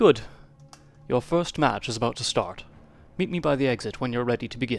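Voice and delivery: grand, impressive, grandiose orator voice. Voicing the orator in a game: impressive orator voice. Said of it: "I need to give this orator a more impressive voice".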